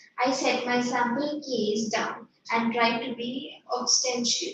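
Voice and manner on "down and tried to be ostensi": ordinary talk, nothing marked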